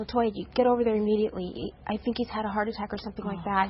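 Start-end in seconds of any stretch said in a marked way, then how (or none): none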